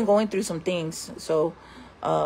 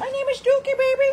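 very high, tiny little pet voice. Introducing the pet and speaking for him in Dookie's little voice. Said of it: "That's his little voice I give him".

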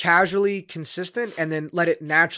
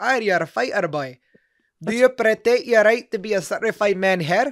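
put-on, best-try Scottish accent; 4 semitones higher than usual. Retelling what a woman said to the speaker: attempted Scottish accent. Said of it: "I'll try to do my best Scottish accent".

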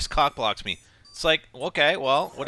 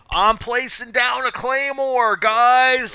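loud hollered yell with drawn-out "guys"; 9 semitones higher, 7 dB louder than usual. Imitating a game character announcing a claymore: imitating a character yelling. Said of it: "yelling it out".

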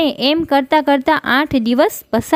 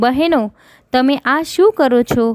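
ordinary delivery

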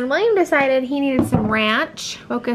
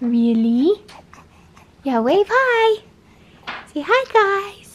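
pitched-up cooing; 8 semitones higher than usual. Showing the little one to viewers, encouraging him to wave, cooing.

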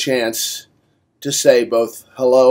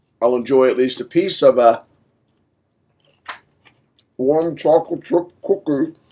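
speaking with full mouth. Speaker eating a chocolate chip cookie mid-speech, talking with mouth full. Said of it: "Sorry for talking with my mouth full".

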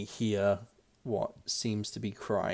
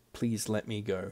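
sobbing, tearful voice, quieter; 5 dB quieter than usual. Voicing a distant captive heard crying amid tunnel noises: crying plea. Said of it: "at least one phrase amongst the crying".

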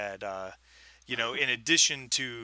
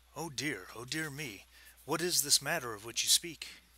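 voice dropped low, conspiratorial tone; 2 semitones higher, 6 dB quieter than usual. Narrator voicing a man asked by visitors for insight: low conspiratorial tone. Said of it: "his voice drops kind of to a conspiratorial tone".

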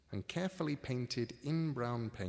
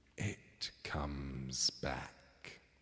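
very low, deep, smoky, satisfied voice; 10 semitones lower than usual. Narrator reads the Sleer's reply after the brooch is replaced: Sleer's satisfied smoke-tendril voice. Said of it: "with satisfaction in its smoke tendril voice".

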